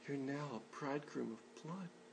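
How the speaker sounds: very quiet, loving, compassionate, tender voice. Showing how some readers hear her line to Moses: romantic, compassionate. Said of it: "romantic, compassionate".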